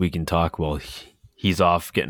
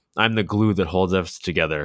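ordinary delivery

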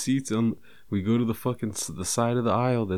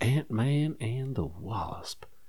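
hushed whisper, quieter; 3 dB quieter than usual. Answering what movie they went to see this weekend, whispering. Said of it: "I'm saying it all whisper-like".

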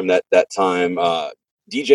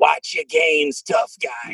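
heavy, laid-on, put-on New York accent; 9 semitones higher than usual. Remembering his first sound man, quoting what he always said in a thick new york accent. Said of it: "He'd have that thick New York accent".

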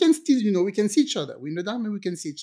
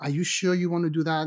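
ordinary delivery

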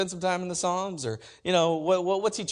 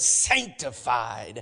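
sanctified said with a little swagger; 7 semitones lower than usual. Explaining a fancy word, sanctified with swagger. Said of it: "you have to say it with a little swag on it".

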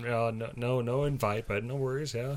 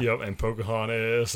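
ordinary talk

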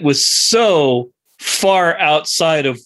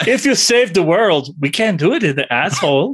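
put-on Swedish accent with a lilt. Recapping a story, quoting a character in a Swedish accent. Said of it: "and with the Swedish accent".

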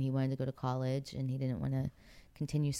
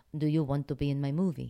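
poor, put-on attempted Italian accent. Retelling what an italian man said, in a bad italian accent. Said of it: "I'm terrible at accents".

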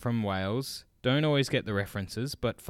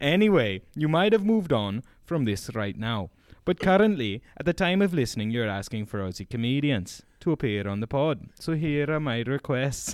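put-on Welsh accent, raised pitch, held throughout; 4 semitones higher, 4 dB louder than usual. Speaker reading out requests for guests on the podcast, in Langford's Welsh accent. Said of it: "this is me doing his accent".

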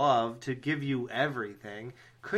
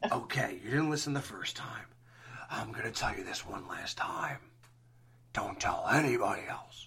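breathy, whispered, altered voice; 4 semitones lower, 5 dB quieter than usual. Warning the listener one last time not to tell anyone, voice sounding like Freddy. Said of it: "why did my voice change into like a".

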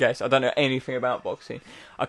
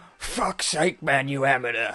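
put-on British film actor voice.

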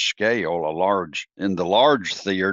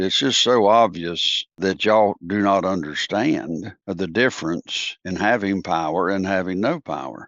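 ordinary delivery

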